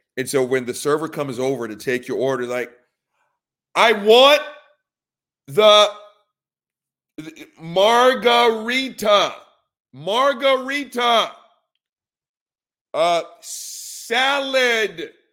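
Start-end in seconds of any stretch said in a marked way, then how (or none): 3.8-15.1 mock slow shouting, higher pitch and louder. Acting out a tourist ordering food abroad: imitating slow loud tourist talk. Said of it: "screaming at her and talking one word a fucking second".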